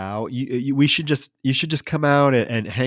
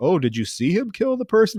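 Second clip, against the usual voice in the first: put-on Indian accent, pitched up, rising inquiring tone; 7 semitones higher than usual. Retelling a movie scene, voicing the man on the call button: imitating an indian accent. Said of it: "talking in, like, this accent".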